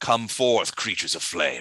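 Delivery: sinister, commanding villain voice. Voicing a caster who looks up after a ritual: summoning villain voice. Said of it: "then you see him sort of look up and he goes".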